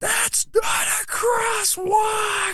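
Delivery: very high, slow, furious shout at full volume.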